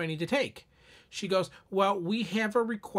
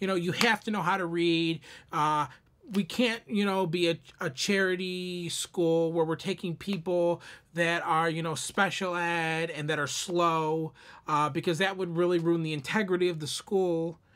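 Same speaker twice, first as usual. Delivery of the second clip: ordinary talk, nothing marked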